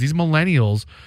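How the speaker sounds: ordinary talk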